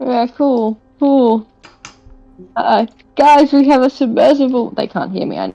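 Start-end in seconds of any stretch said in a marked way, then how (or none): 3.2-4.7 high, loud calling shout. Calling out to party members who cannot hear: shouting to the others. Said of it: "I'm shouting it anyway".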